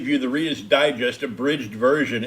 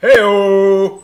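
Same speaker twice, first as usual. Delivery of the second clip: put-on announcer voice, higher and louder; 7 semitones higher, 10 dB louder than usual. Opening the episode with an Ed McMahon impression. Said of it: "that's my Ed McMahon impression".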